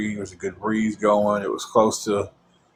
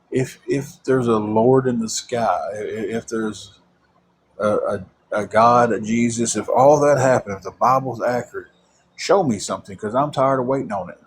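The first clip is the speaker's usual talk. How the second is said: ordinary talk, nothing marked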